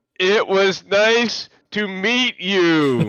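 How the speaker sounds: put-on very slow, annoyingly loud, over-accentuated speech. Voicing an NPC saying goodbye to a player: annoyingly loud accentuated voice. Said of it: "an annoyingly loud, accentuated voice".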